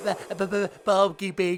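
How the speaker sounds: put-on cartoon pig character voice. Opening the episode with the usual greeting: Porky Pig impression. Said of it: "I'm doing my Porky Pig".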